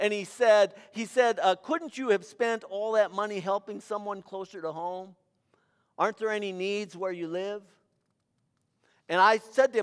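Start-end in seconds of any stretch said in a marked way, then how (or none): 1.5-7.6 play-acted snide, sneering, condescending tone. Retelling a diplomat's remark in an airport customs line: imitating a condescending sneer. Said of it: "sneered very condescendingly".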